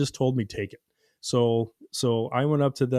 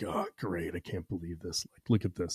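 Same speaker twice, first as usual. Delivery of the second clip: put-on mutter under breath, much quieter, lower; 7 semitones lower, 11 dB quieter than usual. Retelling what a man said as a mother and son walked in, imitating muttering under breath. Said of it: "just under his breath".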